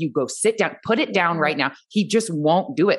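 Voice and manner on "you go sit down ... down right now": imitated firm tone. Retelling commands given to a son who won't listen: imitating a firm tone. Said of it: "I will try to be so firm".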